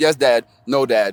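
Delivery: ordinary delivery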